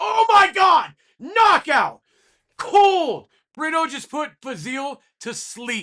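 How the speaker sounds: very loud, very high, shrill, swooping excited scream. A fight commentator reacts to a knockout, screaming. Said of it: "I'm sorry for screaming".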